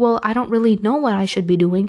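ordinary delivery

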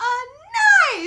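acted triumphant tone. Speaker acting out his reply to the mom's question, retelling a triumphant answer. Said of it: "he just says it so, like, triumphantly".

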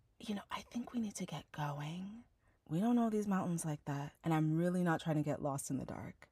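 put-on whisper. Retelling calling to a partner across a field at dusk: retelling a whisper. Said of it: "Lowering my voice to a whisper".

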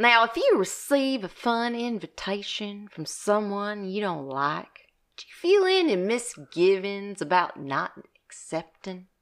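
a light bit of country accent. Asked to pose the interview question in their accent, reading it in a little country accent. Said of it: "You ask me the question in your accent?".

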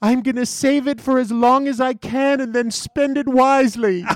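acted bubbly, giddy voice, pitched way up. Recounting a $500 winner's answer, the speaker quotes her, imitating a giddy winner. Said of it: "she's giddy and she's high with winning".

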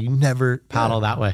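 imitated screaming. Retelling how a surfer yelled at them as a kid: imitating someone screaming. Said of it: "he's screaming at me".

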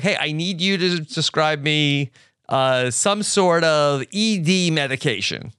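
ordinary delivery

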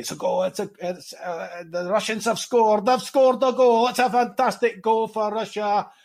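very high, lively, animated football commentator voice. Retelling a commentator calling a Russian goal: Arthur's animated commentary. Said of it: "Arthur in his very animated way".

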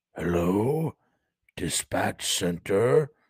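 strangled, choking, hurt-sounding rasp. Narrator reads a corpse speaking into a microphone to dispatch: choking, injured-sounding rasp. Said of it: "the corpse rasped in its choking, injured-sounding tone".

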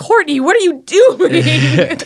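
swooping, loud, shrill, self-scolding yell. Telling someone about a bad morning with her toast: retelling a yell at herself. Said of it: "just yelled".

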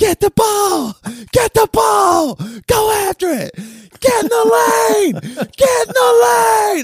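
very high screaming with words stretched out. A dad recalls watching his daughter play, retelling own screaming. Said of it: "I realized I had been screaming".

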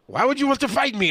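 very high-pitched, put-on, failing Italian accent. Retelling asking a game player why they want to fight, in a failed italian accent. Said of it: "I don't know why I'm doing that accent. It's not Italian at all".

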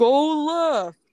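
loud, high yell.

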